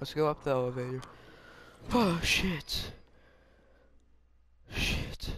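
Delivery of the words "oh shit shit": sudden, jolted, caught-off-guard startled swearing. Streamer playing a game is suddenly scared by something, startled. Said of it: "Scared the fuck out of me".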